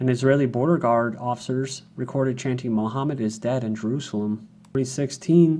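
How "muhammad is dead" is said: ordinary talk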